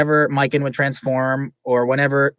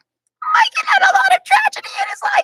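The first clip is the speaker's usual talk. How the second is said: very high-pitched, annoying spider creature voice. Recalling voicing a character, attempting the high-pitched Spider Queen voice. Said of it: "It was really annoying, high pitched because I was sort of going for Spider things".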